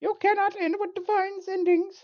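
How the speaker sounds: very loud, very high, booming proclamation. Voicing Fate as it manifests fully in the story: voice of Fate. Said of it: "I'll be Fate".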